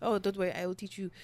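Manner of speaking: put-on cartoon charmer character voice. Retelling what someone told them, in a Pepe Le Pew voice. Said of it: "she in the club with Pepe Le Pew".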